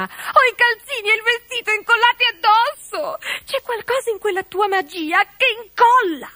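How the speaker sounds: shrill screech. Narrator reading Dorina's cry to the great witch, shrieking. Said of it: "Strillò Dorina".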